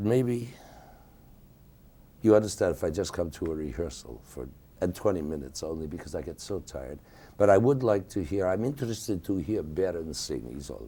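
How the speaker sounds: ordinary delivery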